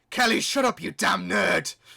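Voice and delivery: very loud, rasping, rough high cartoon shout. During a chat about Doctor Who lore, a line in a Bakugan voice. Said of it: "That's my Bakugan voice".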